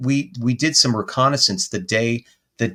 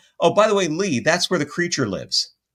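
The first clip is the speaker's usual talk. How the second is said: mock very casual offhand tone, pitched a bit up; 5 semitones higher than usual. Retelling what a neighbor casually said about a creature: imitating a nonchalant neighbor. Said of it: "very nonchalant".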